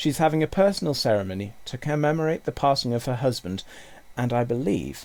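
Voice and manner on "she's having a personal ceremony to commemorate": usual speaking voice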